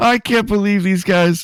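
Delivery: giggling, laughing through words, pitched very high. Retelling a commentator's reaction to a high spot, imitating laughing while talking. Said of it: "He laughs. He goes like".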